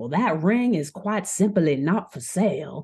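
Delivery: put-on easy, pleasant, drawled Southern accent. Retelling a story, voicing a character refusing to sell: Brett voice, nice Southern accent. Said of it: "Brett's accent's gonna be a lot easier".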